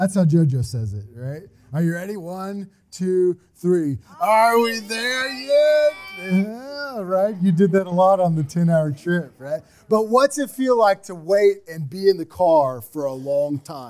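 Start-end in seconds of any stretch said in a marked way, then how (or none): 4.2-5.9 high, drawn-out, deliberately grating and annoying voice. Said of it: "as most annoying as way as possible".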